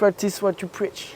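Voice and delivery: put-on slight English accent. Repeating an English phrase when asked to redo it: slightly English accent. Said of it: "tu peux le refaire avec un accent un peu anglais".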